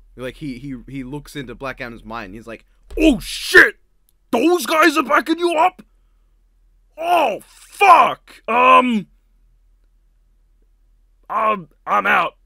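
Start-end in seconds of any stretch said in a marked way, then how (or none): 2.9-12.2 booming, high-pitched, slow, drawn-out bellow. Imagining a villain reading a rival's mind and backing off: Apocalypse voice. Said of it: "that's Apocalypse's voice".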